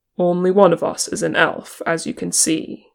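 plain reading voice

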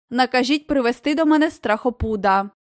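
ordinary delivery, nothing marked

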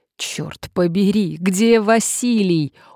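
groaning. Injured man just helped down from a wardrobe, groaning in pain. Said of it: "охая простонал он".

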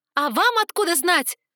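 very high, shrill, loud screaming outburst. A handcuffed prisoner springs up from her chair at the others, yelling. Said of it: "Заорала я".

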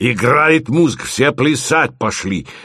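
ordinary delivery, nothing marked

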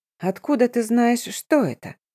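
sly, ingratiating, wheedling, insinuating tone. The vampire woman questions the narrator: insinuating tone. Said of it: "вкрадчивым тоном поинтересовалась вампирша".

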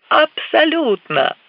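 joyful, confident, high-pitched happy exclamation. The pilot answers his passengers while banking the plane, joyful exclamation. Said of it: "радостно воскликнул Кар".

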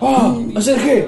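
mock ninja battle cries, shouted high.

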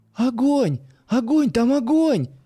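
very high, frightened cry, drawn out. Narrator reads Yulia seeing flames shoot into the sky, crying out in fright. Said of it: "испуганно вскрикнула Юля".

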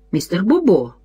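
usual speaking voice

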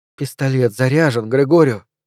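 plain reading voice

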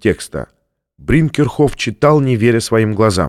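plain reading voice

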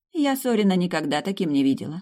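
ordinary delivery, nothing marked

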